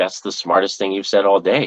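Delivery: ordinary delivery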